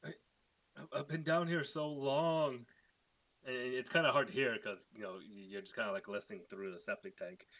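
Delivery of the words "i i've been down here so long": small, pained, tiny voice, high, slow, drawn out. Someone long trapped down a septic tank calls back up, pained tiny little voice. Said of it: "a pained, tiny little voice".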